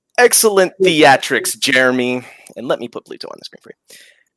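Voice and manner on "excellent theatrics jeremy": loud, mocking, sarcastic delivery with swooping pitch. Voicing a drunk man clapping at a storyteller: mocking applause. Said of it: "someone's mocking him".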